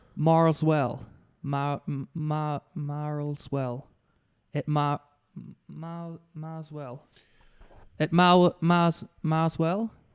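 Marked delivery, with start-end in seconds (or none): 0.2-7.0 attempted American accent. Asked how to say a phrase in an American accent, trying an American accent. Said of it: "How do you say it in a in a American accent?".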